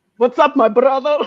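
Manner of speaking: put-on macho, manly voice. Retelling how a man being hit on scares the guys off, manly voice. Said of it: "saying a manly voice like".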